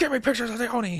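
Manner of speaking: put-on angry newspaper editor voice. Imagining an editor demanding pictures of a menace: J. Jonah Jameson voice. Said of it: "Jonas Jameson voice".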